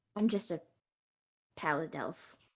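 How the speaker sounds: slow, drawn-out, hushed half-whisper. Speaking in character to the headmistress: half-whispering in character. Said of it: "just kinda whispers".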